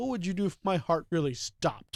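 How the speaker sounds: ordinary talk, nothing marked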